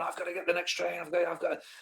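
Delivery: frantic, stumbling panic. Retelling rushing to catch the next train: retelling own panicked words. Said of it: "I'm panicking now".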